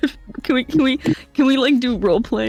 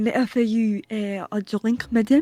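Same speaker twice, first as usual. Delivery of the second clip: put-on French accent voice; 3 dB quieter than usual. Offering someone a drink in character, in a put-on French accent. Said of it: "No way, the French voice".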